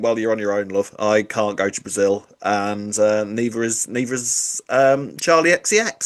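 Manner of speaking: plain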